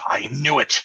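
sudden exclaimed outcry in a character voice. Narrating a character's reaction to a player's suggestion: character yelling. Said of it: "he is going to yell out".

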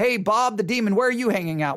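put-on facetious, joking tone. Acting out demons calling each other on the phone: put-on facetious tone. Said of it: "I'm being very facetious here".

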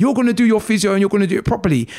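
loud, forceful shouting. Retelling what a woman shouted at him, imitating someone shouting. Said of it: "She's shouting".

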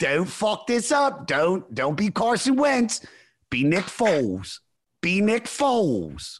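put-on very slow, drawn-out, high Philadelphia accent. Voicing the warning voice inside one's head: Philly voice. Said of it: "that Philly voice".

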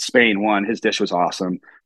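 usual speaking voice

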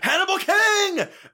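shrill, high, loud, dramatic shout. Retelling a movie scene where a character yells into the camera: imitating Parker Posey yelling. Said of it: "she yells into the camera".

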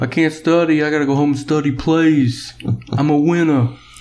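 put-on New Jersey accent. Imitating a football star student, in a New Jersey accent. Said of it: "he got a New Jersey Guinea accent".

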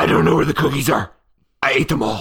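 very loud, booming puppet monster voice. Doing a voice for the other speaker to guess: Cookie Monster voice. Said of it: "that one was definitely Cookie Monster".

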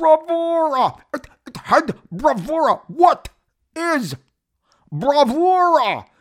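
very high, slow, drawn-out, deliberate exclaiming voice. Praising the nineties comics era: Todd McFarlane voice. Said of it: "in my best Todd McFarl-, McFarlane voice".

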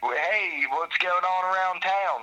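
put-on Western Pennsylvania accent, high and slow. Quoting a woman from an interview, the speaker uses a Western PA accent. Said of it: "That's like my Western PA accent".

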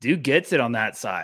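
ordinary delivery

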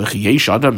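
normal talking voice

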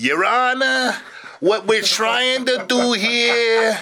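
put-on over-the-top, thick Boston accent, very high-pitched. Quoting a presenter addressing the judge in court: thick Boston accent. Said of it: "he had a really thick Boston accent".

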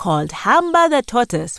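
ordinary delivery

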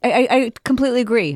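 stammering on first word. Reacting to a surprising remark from Barb: stuttering over words. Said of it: "I'm stuttering over my words".

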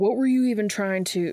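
plain reading voice

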